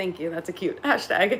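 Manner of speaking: giggly, amused, laughing through the words. Reacting to a hashtag someone posted, laughing. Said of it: "I'm laughing at the at the hashtag".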